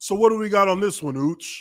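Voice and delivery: flat, even monotone voice. Retelling the coach's question in a film meeting: monotone Andy Heck imitation. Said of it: "monotone as fuck".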